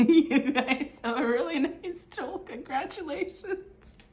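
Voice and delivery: giggling through words, high, slow, very drawn out. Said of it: "I'm gonna stop laughing".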